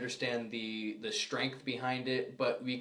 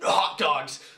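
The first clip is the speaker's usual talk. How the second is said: very loud, very aggressive, barking tone; 3 semitones higher, 9 dB louder than usual. Showing how someone might come up and say a harmless word: very aggressive tone. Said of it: "in a very aggressive tone".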